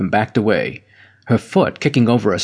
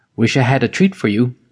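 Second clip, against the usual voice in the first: ordinary delivery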